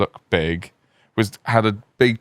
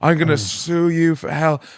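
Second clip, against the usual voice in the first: imitated scream, higher; 7 semitones higher than usual. Retelling how a man screamed at the staff: imitating someone screaming. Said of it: "He was screaming at the staff going".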